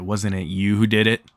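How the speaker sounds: plain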